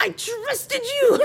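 very high-pitched, furious, angry outburst. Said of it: "he gets so angry, he goes".

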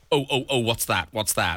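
nervous, jumpy, easily startled spooked fretting. Acting out an anxious new dad, asking a guest: mock spooked. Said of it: "Are you very spooked the whole time?".

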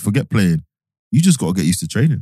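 normal talking voice

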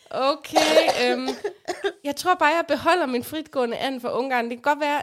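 ordinary talk

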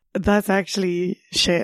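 ordinary delivery

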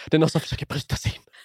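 acted panicked, frantic voice. Speaker retells phoning someone nearby about a break-in, acting out own past panic. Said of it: "Ringer till William i panik".

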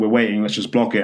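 usual speaking voice

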